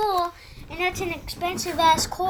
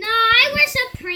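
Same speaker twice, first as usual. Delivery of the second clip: shouting, much louder and higher; 5 semitones higher, 6 dB louder than usual. Arguing with a schoolmate who mocks the clothes worn, yelling. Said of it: "Stop yelling".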